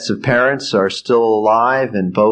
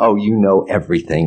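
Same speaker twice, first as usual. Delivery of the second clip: mock-sarcastic tone. Quoting what the kids say to them, mimicking the kids' sarcasm. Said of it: "with that kind of sarcastic tone to their voice".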